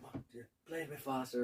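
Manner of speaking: mock mutter under the breath. Retelling the speaker's ma urging faster play on stage: imitating a mutter under her breath. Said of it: "under her breath".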